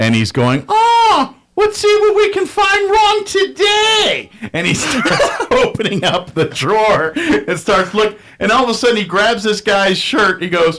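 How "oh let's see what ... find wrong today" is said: cartoonish voice, very high, slow and drawn out. Retelling a drill instructor talking to himself, in a cartoon voice. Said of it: "talking to himself in a in a cartoon voice".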